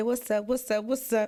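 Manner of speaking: normal talking voice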